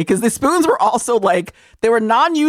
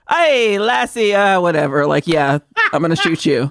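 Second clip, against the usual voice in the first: put-on lazy, low, careless Irish accent; 4 semitones lower than usual. Mock an actor putting so little effort into the accent, with a half-hearted Thomas Gibson Irish accent. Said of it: "He put so little effort into an Irish accent".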